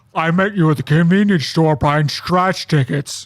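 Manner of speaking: very loud, high, booming comedic voice. Mimicking a fun comedy guy he booked on the show: booming comedic voice impression. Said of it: "I talk like this".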